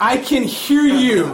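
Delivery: high, loud, slow sing-song voice.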